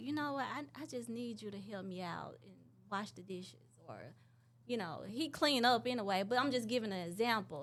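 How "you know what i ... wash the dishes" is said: affectionate, loving tone, quieter. Showing how to ask a spouse for help with dishes: loving way. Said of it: "in a loving way".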